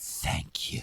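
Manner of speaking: low, soft, mocking whisper with a sneer. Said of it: "It's mocking".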